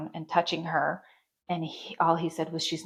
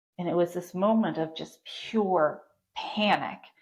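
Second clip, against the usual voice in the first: ordinary talk, nothing marked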